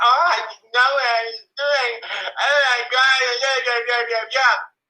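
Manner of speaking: put-on, high-pitched, tearful sobbing and pleading. Imitating a child crying on the stand: mock crying child on the stand. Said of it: "on the stand crying, saying".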